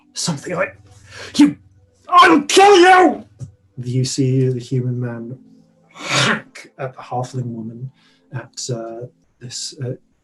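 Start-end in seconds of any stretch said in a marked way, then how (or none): 0.1-3.2 furious scream, very high and rising in pitch. Voicing a poisoned man turning on the halfling: man shouting in rage. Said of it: "The man is shouting down at the".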